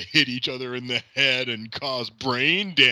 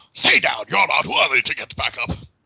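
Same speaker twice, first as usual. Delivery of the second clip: dramatic put-on wrestler voice, louder; 2 semitones higher, 5 dB louder than usual. Joining in imitating a wrestler's stay down line: dramatic Triple H impression. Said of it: "Triple H tries to dramatically say".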